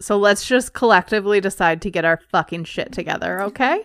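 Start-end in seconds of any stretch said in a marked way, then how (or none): none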